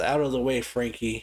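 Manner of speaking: normal talking voice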